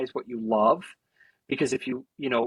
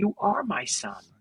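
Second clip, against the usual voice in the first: put-on choked-up voice, higher; 5 semitones higher than usual. Imagining a hug and a reply, imitating Kevin Costner choking up. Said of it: "choke in his voice".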